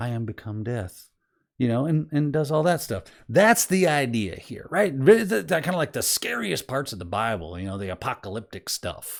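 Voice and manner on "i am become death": hushed, half-whispered under the breath. Imagining Oppenheimer jumping out after an explosion; half-whispered, hushed Oppenheimer voice. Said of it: "in a whispered, hushed voice says".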